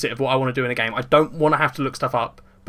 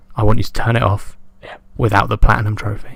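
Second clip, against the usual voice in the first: soft, quiet close-mic voice, lower pitch; 4 semitones lower, 7 dB louder than usual. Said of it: "You're gonna hear me real quiet".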